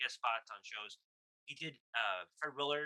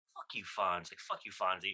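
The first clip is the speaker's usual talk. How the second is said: put-on angry outburst, lower pitch; 4 semitones lower than usual. Retelling a talk show scene where a guest snaps back: imitating an angry retort. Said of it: "Why is he so angry?".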